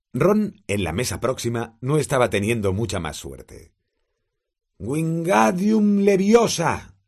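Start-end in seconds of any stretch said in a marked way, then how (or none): 4.7-6.8 very high, shrill, shouted yell. Narrator voicing Ron at the next table, shouting a spell. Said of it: "gritó agitando sus largos brazos".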